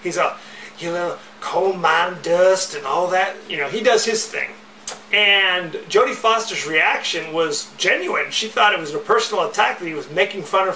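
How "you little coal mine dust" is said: slow, drawn-out, mocking West Virginia drawl. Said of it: "starts mocking her accent".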